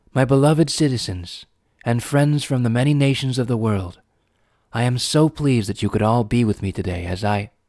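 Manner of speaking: formal, ceremonial speech delivery. The princess begins her speech to the gathered citizens and nations, a formal public address. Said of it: "and behind the podium appeared an even more familiar figure, the slim but tall figure of the princess, in the fullness of her beauty. She looked down on Twilight with a radiant smile and gave her a wi".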